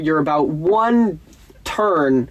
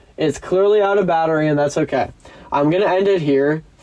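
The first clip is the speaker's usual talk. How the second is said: normal talking voice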